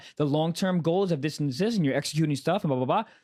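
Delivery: ordinary talk, nothing marked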